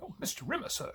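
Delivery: very high, soft impression voice. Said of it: "imagine Crichton's voice going".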